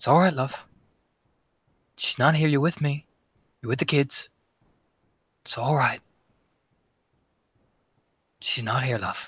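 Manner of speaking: theatrical stage whisper. A game narrator voices someone leaning in to half-whisper in a player's ear, very soft half-whisper. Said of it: "whispering very softly".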